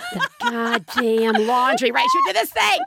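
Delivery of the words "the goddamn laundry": acted, suppressed angry grumble with swooping pitch. Imitating the mother grumbling about housework: imitating an angry mutter under the breath. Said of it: "She would say this under her breath".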